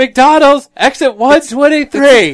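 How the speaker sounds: high-pitched, drawn-out mocking shout.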